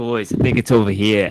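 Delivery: put-on Boston accent. Speaking in character to the other players: boston type accent. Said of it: "Boston type accent".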